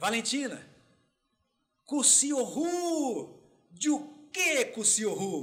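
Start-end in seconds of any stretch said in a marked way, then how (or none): 0.0-3.4 put-on high hollering, as across distance, word drawn out. Retelling shouting to his wife about a huge agouti he spotted, retelling a shout. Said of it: "Gritei e falei assim".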